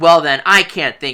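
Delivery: plain reading voice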